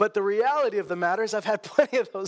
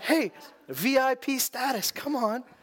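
put-on sycophantic, fawning tone, very slow, drawn out; 4 semitones higher than usual. Retelling how the disciples do a one eighty toward the blind man: imitating disciples turned suddenly fawning. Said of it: "they act like they're on his team".

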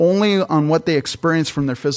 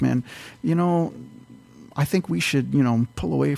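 mock muttering under breath, quieter; 5 dB quieter than usual. Acting out a grumbler stirring up strife: imitating someone murmuring under breath. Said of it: "kind of like somebody kind of murmuring".

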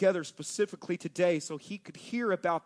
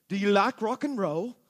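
imitated British accent; 2 semitones higher, 4 dB louder than usual. Retelling hearing a stranger's voice in an airport: imitating a British accent. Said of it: "God does have a British accent".

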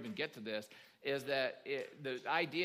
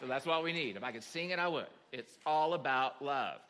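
normal talking voice

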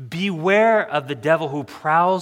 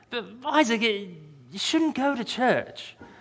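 put-on British accent, higher, quieter and slower; 7 semitones higher, 4 dB quieter than usual. Retelling what Stan said to Isaac about church, imitating Stan's British accent. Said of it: "Stan is speaking in a British accent".

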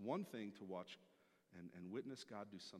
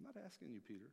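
ordinary delivery

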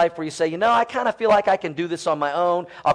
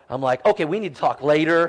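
ordinary talk

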